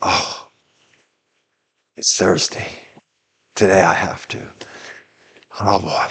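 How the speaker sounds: soft, whispered, weary groan.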